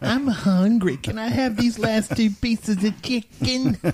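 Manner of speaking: high, very slow, drawn-out voice. Retelling a friend's late-night request for the last chicken: imitating Crowley. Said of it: "would I really ask you that way?".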